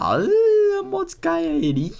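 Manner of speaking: shrill, high, slow, swooping belted call. Listing characters' catchphrases and doing one: Veneno impression. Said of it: "What a great impression".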